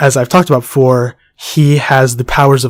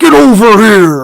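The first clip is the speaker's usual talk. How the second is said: put-on loud, high, belted old-man voice; 8 semitones higher, 6 dB louder than usual. Describing a game fighter, the speaker quotes his famous line: Scorpion impression, old-guy voice. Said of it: "You sound like a really old guy".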